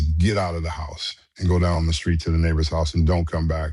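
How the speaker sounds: normal talking voice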